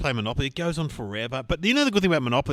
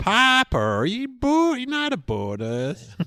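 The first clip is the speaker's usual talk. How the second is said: very slow, very high, drawn-out Southern American drawl; 12 semitones higher, 4 dB louder than usual. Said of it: "Southern American".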